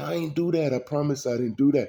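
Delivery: mock high, tearful, sobbing pleading voice. Retelling how an accused man pleaded to police: imitating someone crying. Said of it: "And he started crying".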